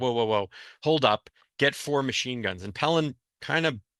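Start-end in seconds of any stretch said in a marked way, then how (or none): none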